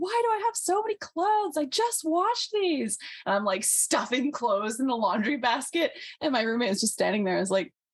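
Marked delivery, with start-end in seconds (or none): 0.0-3.0 mock very high, jokey half-yell. Recounting stuffing clothes in the laundry basket as a roommate watched: retelling a joking near-yell. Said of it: "And so I'm like jokingly, like sort of not like yelling".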